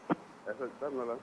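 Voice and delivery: quiet, faint voice. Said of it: "And he went lower".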